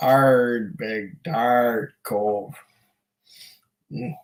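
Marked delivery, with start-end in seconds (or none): 0.0-2.5 put-on pirate accent, lower and quieter. Speaker repeats the drink's name for viewers, in a pirate accent. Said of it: "Notice I said that with a pirate accent".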